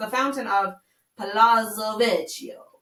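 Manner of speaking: Transylvanian-sounding vampire accent. Asked to pronounce an italian place name, in an accidental vampire accent. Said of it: "I just sounded like a vampire".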